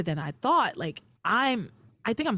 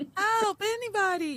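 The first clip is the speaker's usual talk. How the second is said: very high, half-hearted squeak with no real panic; 11 semitones higher than usual. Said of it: "Tabitha's screaming for help was not convincing".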